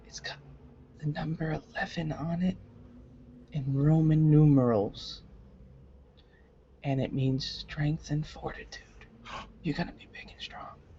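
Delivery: confiding stage half-whisper. A player's character half-whispers privately to another character: half-whispering. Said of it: "I'm whispering this just to Danderfluff".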